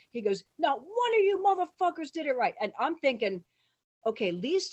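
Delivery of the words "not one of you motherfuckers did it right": enraged, shrieking, furious scream, very high. Retell what Lloyd said to a group about their wasting his time, imitating Lloyd screaming. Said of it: "Lloyd starts screaming".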